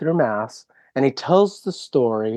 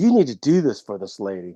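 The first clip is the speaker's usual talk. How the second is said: acted, forceful, pushy, aggressive commanding tone; 3 semitones lower than usual. Retelling how a man addressed st. jude in his homily: mock-aggressive retelling. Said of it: "he kind of tells it in kind of an aggressive way".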